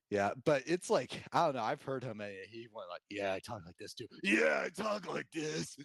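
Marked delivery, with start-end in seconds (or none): 3.1-5.7 gravelly, grinding voice, pitched up. Recalling something he heard him say, gravelly Will Arnett impression. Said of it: "voice has gotten more gravelly with age".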